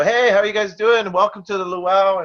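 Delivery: very high, fake-cheerful put-on voice. Retelling how a performer greets the patrons, imitating a fake cheerful greeting. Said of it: "you got to put on this mask".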